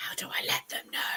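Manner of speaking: hushed, eerie, creepy, sinister whisper. Reading out a viewer's question in a joking way: creepy whisper. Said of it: "Like a really creepy way of saying it".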